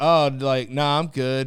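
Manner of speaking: mock puzzled, uncertain, slow, loud, baffled, confused. Retelling own answer to a guy offering a hand: imitating own confused reply. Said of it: "I said it with so much confusion".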